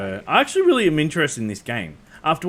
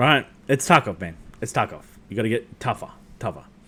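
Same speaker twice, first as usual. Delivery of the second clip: usual speaking voice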